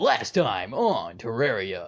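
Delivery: intense, slow, swooping anime announcer voice. Like an over-the-top cartoon announcer recapping the last episode with booming, intense energy. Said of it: "I'm getting my narrator voice back on".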